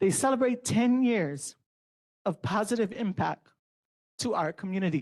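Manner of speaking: halting, choked-up voice on the verge of tears. Announcing a scholarship fund's anniversary, the speaker gets emotional: voice choking up. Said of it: "sorry, I'm gonna cry".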